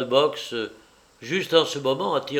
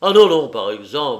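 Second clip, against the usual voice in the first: loud, exclaimed, protesting tone; 8 dB louder than usual. Refusing his visitor's offer to come back another time, exclaiming. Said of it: "s'exclama M".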